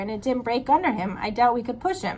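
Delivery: plain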